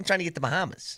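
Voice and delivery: put-on thick, strong New York accent. Imitating the guy being discussed, in a thick New York accent impression. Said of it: "that is strong and thick".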